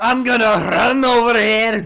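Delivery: put-on loud, high-pitched, bellowing Scottish accent. Imitating a game character after hearing he has a Scottish accent: Karn's Scottish accent. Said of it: "that Scottish accent like all the other ones do".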